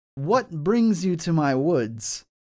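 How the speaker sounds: loud calling-out voice. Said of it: "they'll call out to you".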